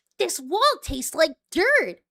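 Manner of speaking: high swooping cartoon voice. Quoting a line from an episode, then naming it: Tails voice. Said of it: "there's my Tails voice".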